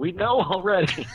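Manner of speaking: shrill, high-pitched, loud shout in character voice. Voicing a character answering loud hooting mid-fight: shouting in character. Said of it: "Verna just shouts".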